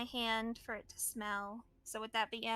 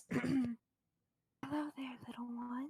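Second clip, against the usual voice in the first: very slow, drawn-out, put-on dragon voice; 4 dB quieter than usual. Asked what to say in Draconic, the speaker gets back into a dragon voice. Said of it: "I gotta get back in the voice".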